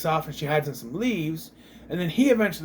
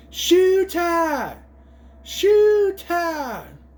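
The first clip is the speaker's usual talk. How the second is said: much higher-pitched, louder, slower yelling; 4 dB louder than usual. Recounting watching him corner Dollface, the speaker re-enacts a Jurassic Park guy yell. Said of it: "I'm sitting here yelling".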